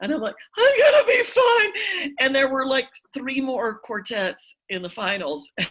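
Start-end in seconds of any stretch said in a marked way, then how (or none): 0.6-2.1 very high, loud, slow wailing sob. Retelling her reply to the page who asked if she was okay, imitating ugly crying. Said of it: "like ugly crying".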